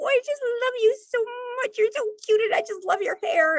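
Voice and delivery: put-on very high, cooing baby-talk voice. A mom shows how she talks to her teenage son: baby voice. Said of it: "I'll just put on that baby voice".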